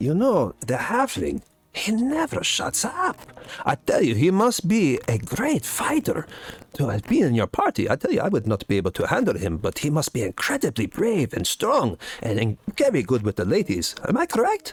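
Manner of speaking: slow whisper. Voicing a character who pulls a party member aside, whispering into their ear. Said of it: "he whispers into your ear".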